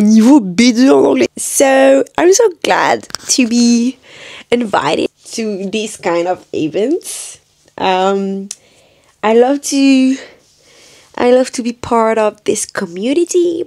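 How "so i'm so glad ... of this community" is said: slow, deliberate, put-on English accent. French speaker retells speaking English with an influencer relations rep: best English accent. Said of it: "j'ai sorti mon meilleur accent".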